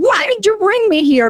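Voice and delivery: put-on, desperate, high-pitched, upset scream. Recounting being so upset she walked outside crying out to the Lord, retelling screaming at God. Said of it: "I'm screaming at the Lord".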